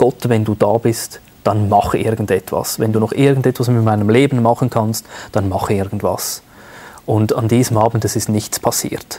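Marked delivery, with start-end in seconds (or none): none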